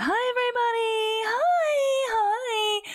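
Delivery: very high-pitched, slow, sugary, put-on fairy voice. Recalling doing kids' parties and greeting everybody in a fake fairy voice. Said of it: "putting on this fake fairy voice of".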